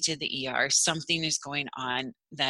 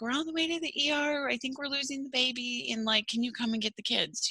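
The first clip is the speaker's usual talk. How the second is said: put-on high, tearful speech, words barely getting out; 10 semitones higher, 4 dB quieter than usual. Retelling calling someone to pick up her kids on the way to the ER, imitating tearful speech. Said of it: "and I'm crying. I can barely talk".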